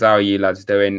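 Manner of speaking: normal talking voice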